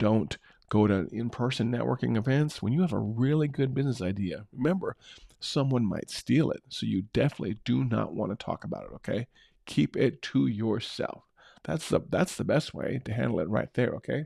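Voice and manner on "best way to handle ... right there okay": ordinary talk, nothing marked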